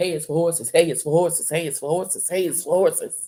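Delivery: very loud, deep, booming, hammered-home repetition. Doing a Bernie Mac impression: Bernie Mac voice. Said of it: "in my best Bernie Mac impression".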